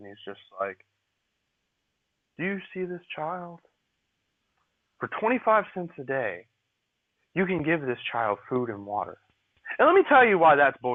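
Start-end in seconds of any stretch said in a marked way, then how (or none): 2.4-9.2 play-acted gentle, coaxing, soothing charity-ad voice. Describing a charity commercial, imitating the old man asking viewers: soothing voice. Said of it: "with a real nice soothing voice".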